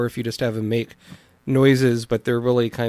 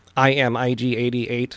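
slow machine-like voice. Showing how they would voice the robot: stereotypical robot Dalek voice. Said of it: "like a Dalek".

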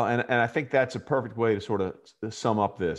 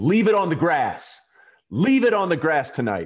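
put-on firm, loud, forceful delivery, pitched up; 6 semitones higher, 5 dB louder than usual. Retelling words said while walking the team onto the field: imitating a loud, forceful command. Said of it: "you just said it loudly and forcefully".

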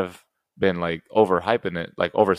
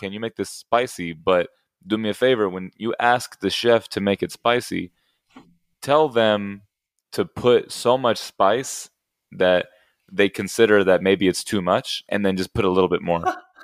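ordinary delivery

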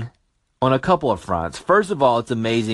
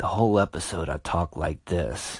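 smooth, hushed late-night radio DJ delivery; 7 semitones lower, 7 dB quieter than usual. Recalling recording late at night in a hotel, doing his Quiet Storm voice. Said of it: "had to do my Quiet Storm voice".

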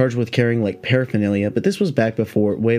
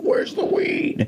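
strange, otherworldly, put-on alien voice; 3 dB quieter than usual. Imagining a cop kicking down his door; weird alien voice. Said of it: "that was more of an alien voice".

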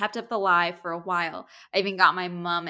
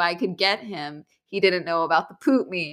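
usual speaking voice

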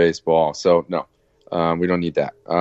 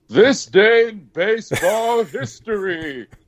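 very high superhero announcer voice, proclaiming. A host on air introduces a segment in Superman voice. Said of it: "Superman voice is coming back".

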